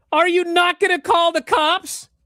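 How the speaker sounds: very high, very loud, shrill scream. Recounting the end of a scene, imitating Ethan screaming. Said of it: "Ethan screams".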